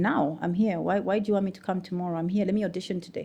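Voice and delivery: ordinary delivery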